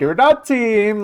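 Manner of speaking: put-on cheerful German accent. Quoting a line the way Schmucky says it, Schmucky's cheerful German accent. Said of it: "He says it in the most cheerful German accent ever".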